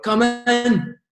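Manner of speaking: acted shrill, very high, shouted scolding. Retelling the gaffer shouting at him when he knocked for his boots, imitating the gaffer shouting. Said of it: "He's shouting at me".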